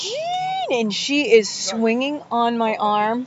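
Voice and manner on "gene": very high, stretched-out, drawn-out shriek. Retelling a friend screaming at a celebrity getting into his limo: imitating friend screaming a name. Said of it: "she's screaming".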